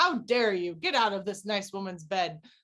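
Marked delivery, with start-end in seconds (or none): none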